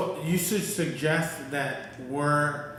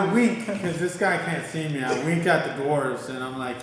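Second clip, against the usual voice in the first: plain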